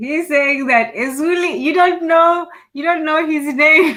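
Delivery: very high, loud words bursting through laughter. Explaining what another speaker just said, laughing while talking. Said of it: "I'm laughing at, at Koku".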